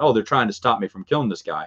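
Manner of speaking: plain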